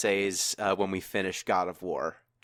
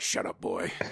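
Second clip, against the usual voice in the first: put-on stern warrior voice, quieter; 6 dB quieter than usual. Retelling a game scene, quoting Kratos: Kratos voice. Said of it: "And Kratos is like".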